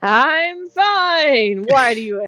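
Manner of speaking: every word shouted. Retelling replying to someone who asks if you're okay, acting out a shout. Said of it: "you're shouting".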